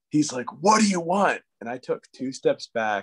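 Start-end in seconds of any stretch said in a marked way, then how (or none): 0.7-1.5 hostile, angry, raised-pitch voice. Retelling a man who came to the door angry: imitating an angry man.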